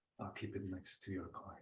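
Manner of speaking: very quiet, hushed whisper. Voicing a character replying to a flirtatious gift: whispering back. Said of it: "Ramis will whisper back".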